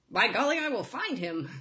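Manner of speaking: put-on old-timey 1920s-style voice. Joking about a movie character, the speaker tries an old-timey 1920s voice. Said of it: "that's more of a 1920s voice".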